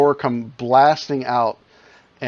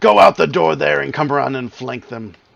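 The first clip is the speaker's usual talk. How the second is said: loud, rough, creaky yelling; 2 semitones higher, 4 dB louder than usual. Voicing a character calling out an order to flank them: yelling. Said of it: "Larix yells out".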